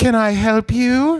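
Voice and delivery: put-on British accent, drawn-out, very slow and high. Retelling a neighbor answering the door: imitating a British lady. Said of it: "it's a British lady".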